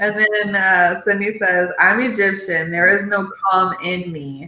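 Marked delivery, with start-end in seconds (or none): none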